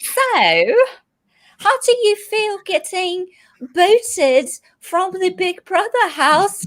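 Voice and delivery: put-on British accent, very high and slow. Playing an interviewer for a British person, in a put-on British accent. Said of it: "I'm gonna try to like interview you with a British accent".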